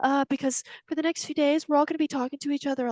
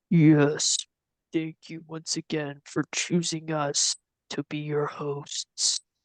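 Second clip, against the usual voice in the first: very low, deep, rumbling voice; 10 semitones lower than usual. Describing a voice heard in your mind as it speaks: deep rumbling voice. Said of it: "deep voice like rumble in your mind".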